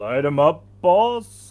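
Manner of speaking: booming big-brute voice, very loud. Narrating the next turn in a game, voicing the big guy, big guy character voice. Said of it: "big guy. And he goes like".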